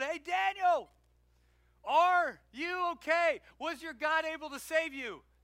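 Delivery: put-on slow, loud, high, carrying, drawn-out yell. Retelling a Bible story, the speaker voices the king calling out to Daniel; retelling a yell. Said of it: "the king runs and he yells out".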